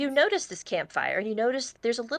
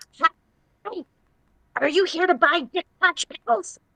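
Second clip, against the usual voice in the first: put-on goblin voice, much higher pitch; 6 semitones higher, 4 dB louder than usual. Retelling what a man said to him, in a goblin voice. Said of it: "what you're saying as the goblin".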